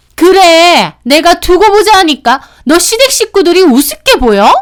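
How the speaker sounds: sudden, high-pitched, furious yell.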